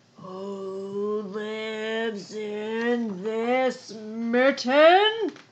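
low, deep, growly bear voice, drawn out. Reading a story aloud, an unseen newcomer calls to the animals in the mitten, deep, growly voice. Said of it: "a deep, growly voice said".

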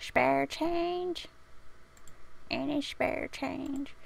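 put-on high, creaky little old lady voice. Speaker begs for spare change, old lady voice. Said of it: "if I'm gonna do that voice I should dress like an old lady".

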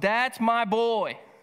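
put-on full-lung scream of pride. Addressing fathers, the speaker acts out cheering for their child: imitating a proud father's scream. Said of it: "screamed at the top of your lungs".

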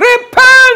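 shrill, piercing, very high, loud preacher-style shout. Retelling how John preached in the wilderness: imitating John shouting. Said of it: "you can hear him shouting".

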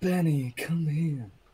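mock creepy, unsettling, high-pitched voice. Repeating the other speaker's call to show how it sounded: imitating a creepy call. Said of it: "I think it was just".

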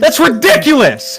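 loud yelling, shouting. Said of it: "What are you yelling at this child for?".

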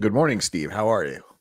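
put-on FM radio DJ voice. Greeting the other speaker at the start of the show, in an fm dj voice. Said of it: "I was using my FM DJ voice there".

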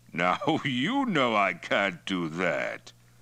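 said with a chuckle. Refusing the patrolman's plea to let them go: chuckling. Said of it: "Toktai chuckled".

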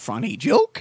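groaning put-on character voice. Quoting what Yoda says after telling a joke, Yoda voice. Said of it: "saying "funny joke" as Yoda".

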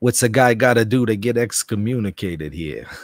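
loud put-on New York accent. Reading a viewer's chat question aloud, in a new york accent. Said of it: "In a New York accent".

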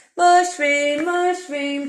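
loud, cheeky, playful playground taunt. One friend teases another who has just insisted he is a hero. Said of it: "teased Herbert".

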